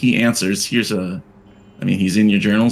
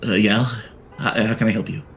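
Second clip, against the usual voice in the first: confused, puzzled, unbothered, not annoyed. Voicing a man who answers the door confused: [name]'s voice. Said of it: "That's his voice now".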